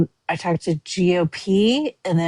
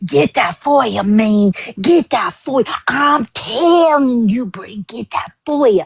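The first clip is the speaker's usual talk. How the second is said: strained, throat-straining put-on woman's voice, much higher; 5 semitones higher, 4 dB louder than usual. Retelling what a woman kept repeating to him, throat-straining imitation of her. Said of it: "that hurts my throat to fucking imitate her".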